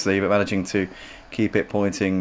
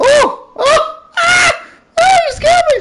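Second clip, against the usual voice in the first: shrill, drawn-out, very high, loud yelps of fright; 10 dB louder than usual. Speaker calling a race is suddenly scared, startled, voice going high. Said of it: "I don't know why my voice went so high there".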